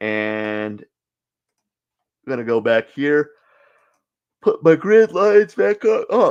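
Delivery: speaking through a yawn. Wrapping up a session, putting grid lines back up, yawning. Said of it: "excuse me, I'm yawning".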